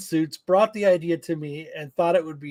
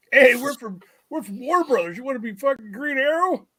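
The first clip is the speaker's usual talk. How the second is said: higher-pitched, casual, offhand delivery; 7 semitones higher than usual. Imitating two random studio guys offering a role: imitating random studio guys. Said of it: "I just think it's two randos".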